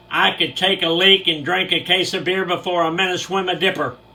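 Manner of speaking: put-on announcing voice. Retelling what a man declared to everyone on the bus: retelling an announcement to the bus. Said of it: "he announces to the bus".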